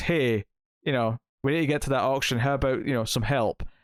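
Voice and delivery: ordinary talk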